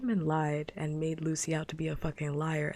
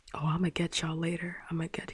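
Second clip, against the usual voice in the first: put-on muttering villain voice, faster pace. Retelling how a child responded after getting caught lying, imitating Edmund muttering like a villain. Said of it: "He's like muttering like a villain".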